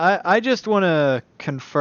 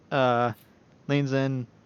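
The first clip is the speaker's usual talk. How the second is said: ordinary talk, nothing marked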